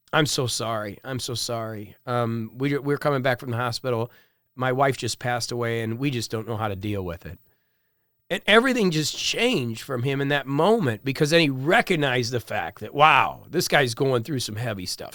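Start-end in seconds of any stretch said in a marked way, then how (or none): 0.1-7.4 very quiet, soft, hushed murmur. Retelling a father's apology on a subway: imitating someone speaking quietly. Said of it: "looking down real quiet".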